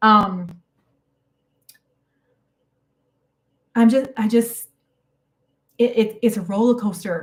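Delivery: tearful, halting, crying speech. Streamer crying on live stream for the first time, crying while talking. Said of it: "first time crying on live stream".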